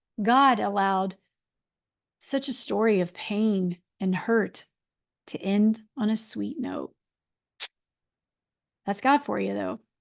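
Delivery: on the verge of tears. Talking to her listeners, she admits she is tearing up as she speaks. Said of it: "I'm tearing up".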